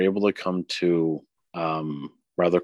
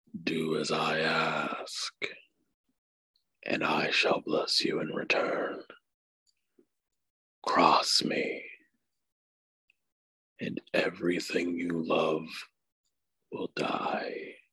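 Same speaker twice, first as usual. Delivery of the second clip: breathy, hushed whisper in a looming dragon voice; 8 dB quieter than usual. Narrating a scene, the speaker voices a shadowy dragon rising up before a player: dragon voice. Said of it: "the dragon that's on the table just kind of like gets up".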